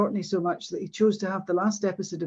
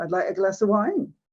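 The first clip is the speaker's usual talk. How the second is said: Orkney-style rising pitch at the end on wine. Illustrating Orkney speech influenced by Norwegian dialects: rising pitch at end on 'wine'. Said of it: "the rising intonation that we have in Orkney".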